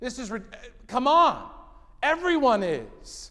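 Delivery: exasperated, heavily sarcastic complaining tone.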